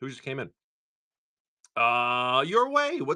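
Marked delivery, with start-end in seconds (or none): 2.5-3.2 voice breaking mid-word on "what's". Thanking someone for a raid and asking who just came in: voice cracking. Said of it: "my voice cracked".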